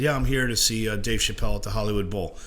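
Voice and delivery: ordinary talk, nothing marked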